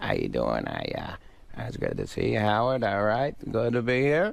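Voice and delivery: mumbling, halting, words run together. Acting out Adam's mumbling greeting to Howard, mumbling Adam impression. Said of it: "he just kind of mumbles and he goes like".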